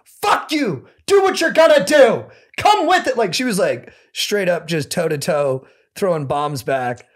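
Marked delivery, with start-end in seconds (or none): 0.2-3.2 mock very high, shrill, furious, defiant screaming. Retelling a woman on the phone screaming back at threats, retelling her screaming back. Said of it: "She's screaming back at me".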